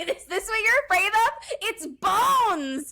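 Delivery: loud, high-pitched yelling.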